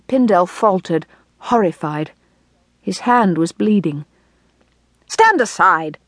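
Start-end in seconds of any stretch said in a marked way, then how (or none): 5.0-5.8 regal, impatient, barked. Reading a king ordering a man to stand aside, barked. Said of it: "barked the king, out of patience".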